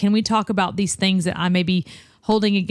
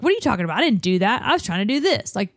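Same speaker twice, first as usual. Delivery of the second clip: defensive manner; 3 semitones higher than usual. Speaker demonstrates how someone reacts when misunderstood, demonstrating a defensive tone. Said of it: "I don't think they should get defensive".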